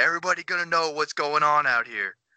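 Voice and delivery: mock restrained light screaming, repeated over and over. Recounting how a player kept yelling after scoring sixty, imitating his screaming. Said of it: "he just kept screaming".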